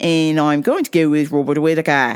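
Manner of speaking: put-on Australian-accented voice. Picking a winner for a fight, announcing the choice in an Aussie voice. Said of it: "I have to use my uh, Aussie voice here".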